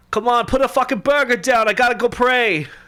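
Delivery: very high-pitched and loud. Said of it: "that's my [name] impression".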